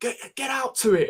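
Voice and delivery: high-pitched, loud shout.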